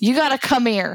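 put-on curt angry voice. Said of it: "which that's how he talks".

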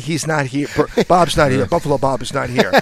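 ordinary talk

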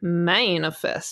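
manifest said with Southern American accent. Naming a book title, saying it with Southern accent on 'Manifest'. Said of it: "you got to say it with a Southern accent".

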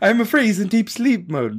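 put-on Russian accent sliding into English. Voicing a droid going into sleep mode: mixed Russian and English accent. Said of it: "My Russian and my English accent got mixed up".

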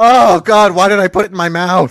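pretend coughing. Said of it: "why are you coughing".

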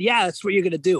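quick, plain, unfussed, matter-of-fact. Retelling how his mom answered his vow to work there someday; imitating mom, matter-of-fact. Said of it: "very matter-of-factly".

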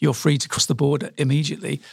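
normal talking voice

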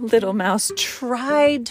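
ordinary delivery, nothing marked

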